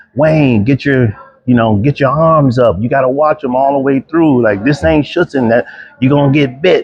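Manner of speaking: scream held back to a high, light yell. Retelling a dog-bite training drill, imitating someone screaming. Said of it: "Darnell was screaming at me".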